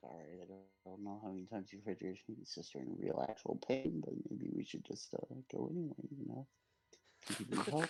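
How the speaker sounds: soft, mumbled mutter under the breath. A player speaks as his character in a role-play, muttered under his breath. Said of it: "is gonna mutter under his breath".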